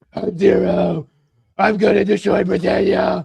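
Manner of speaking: rasping voice, slow and heavy. Imagining a masked leader's lines in a Dark Knight voice: Bale Dark Knight voice. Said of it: "Bale v-, n-, Dark Knight voice and go".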